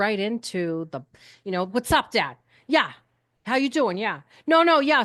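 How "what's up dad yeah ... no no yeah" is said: put-on Boston accent, full of attitude. Recalling talking to Dad on the phone, acting out a Boston accent with attitude. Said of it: "this Boston accent and this attitude".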